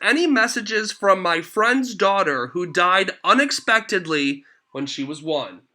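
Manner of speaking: ordinary talk, nothing marked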